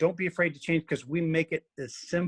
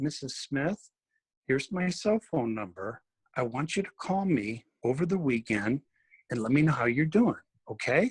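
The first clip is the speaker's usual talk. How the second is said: lowered, dropped voice; 4 semitones lower than usual. Speaking to a patient on the decompression table, in a lowered voice. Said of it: "I lower my voice".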